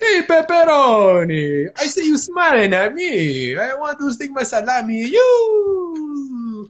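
cartoon Italian accent, swooping high, stretched "you". Riffing on Italian American accents with the others, doing a Rocky and Bullwinkle accent. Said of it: "Rocky and Bullwinkle accent".

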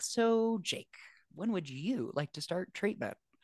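put-on warm, friendly, welcoming, inviting voice. Retelling a friend's answer on the hotline: imitating Kyle speaking warmly and invitingly. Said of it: "very warmly and very invitingly was like".

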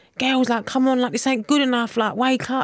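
mock frustrated, urging scream. Retelling a cup match against Arsenal, screaming at the team from a corner; retelling own scream. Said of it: "I was just screaming at a corner like".

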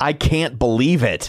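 feigned astonishment, dry and laced with sarcasm. Answering a question about it being week five: sarcastic. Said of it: "I sense sarcasm".

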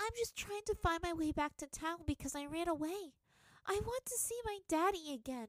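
effusive gush. A narrator reads Toph answering a merchant who stopped her cart, gushing. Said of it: "she gushed".

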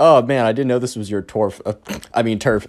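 put-on held-back, suppressed laughter. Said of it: "James is holding back his laughter".

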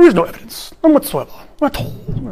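put-on accent from Cambridge. Retelling a professor's answer at a talk: imitating a Cambridge accent. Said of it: "in Cambridge accent goes".

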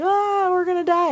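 mock, very high-pitched squealing yell. Speaker recalls a sudden fast turn on a water park ride, retelling a yell. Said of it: "I'm like yelling".

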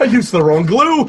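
high-pitched, loud, frightened panic. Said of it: "He's frightened because the beard won't come off".

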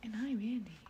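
mimicking a quiet voice. Mimicking the other speaker's intro: imitating a quiet intro. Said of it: "Why are you so quiet?".

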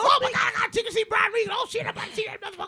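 mock excitement, very high, rushed, fast gush. Showing how a friend sounds when excited about a ticket: imitating Ray Money excited. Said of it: "that's how Ray sounds when he get, gets excited".

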